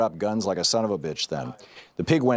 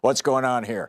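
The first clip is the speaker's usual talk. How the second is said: put-on intimidating, hoggish voice; 3 semitones higher than usual. Retelling a man who walked up to the car window, in a hoggish, mock-intimidating voice. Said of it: "with a hoggish voice trying to sound intimidating".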